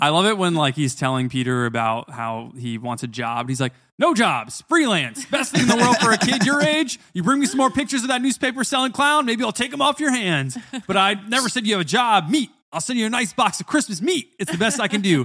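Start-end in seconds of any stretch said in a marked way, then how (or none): 4.0-15.2 very high voice, pitch way up. Retelling a movie scene where Jameson refuses Peter a job: J. Jonah Jameson impression. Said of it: "Great impression".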